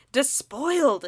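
hissing, scandalised single word. Narrator reads a woman lunging at a boy's book, hissing. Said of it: "she hissed".

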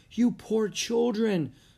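high, cried-out exclaiming. A woman welcomes two soaked, shaking children into her house: cried out. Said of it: "cried the woman".

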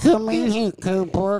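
acted baby-talk voice, high and loud. Recalling a woman from the past calling cooper; imitating baby talk. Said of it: "That's the one that you said with baby talk".

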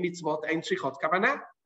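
plain

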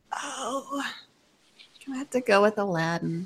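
sorrowful and hurting. Asked to pick first between two seeded films, choosing one, sad and pained. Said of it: "You sound so sad".

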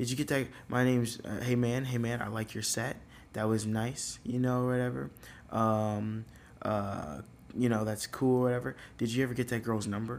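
normal talking voice

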